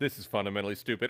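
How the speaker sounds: barely audible, hushed, tossed-off aside. Imitating how Jay slips a line into a debate: imitating Jay saying it really quickly. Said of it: "he says it really quick".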